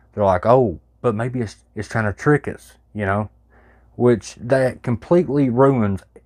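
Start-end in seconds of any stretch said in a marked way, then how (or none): none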